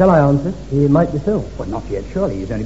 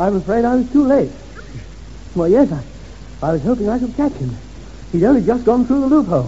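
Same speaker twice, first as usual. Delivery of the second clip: feigned breathlessness, out of breath, pitched up; 5 semitones higher than usual. A character pretends to have raced out after someone; feigned breathlessness. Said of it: "I'm a bit out of breath".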